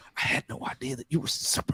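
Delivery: whispered voice. Retelling a character's line from a scene: imitating a whisper. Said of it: "Why do you whisper that part?".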